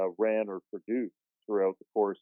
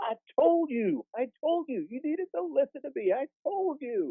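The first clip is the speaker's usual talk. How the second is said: mock yelling, much higher and slower. Retelling how one man yelled at another after a big game: retelling a yell. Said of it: "Shane starts yelling".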